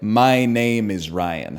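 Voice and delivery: very slow, over-enunciated, every word spelled out. Showing how to say the name so it is understood: over-enunciated like ordering in a foreign language. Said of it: "Like I'm ordering in a foreign language".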